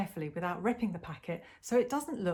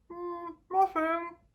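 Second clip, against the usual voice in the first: very high voice, chewing, speaking through a mouthful; 10 semitones higher, 3 dB louder than usual. Reading a story, answering Mum while hiding raisins: mouth full of raisins. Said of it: "a raisin nearly pops out of my mouth".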